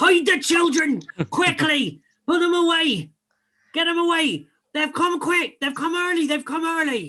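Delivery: very high, loud bellow. Narrating a game, a character bellows a warning at the bar, bellowing. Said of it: "He bellows at the bar".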